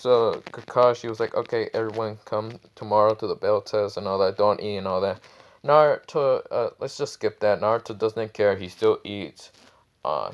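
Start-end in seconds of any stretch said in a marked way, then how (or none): none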